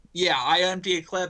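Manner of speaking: ordinary delivery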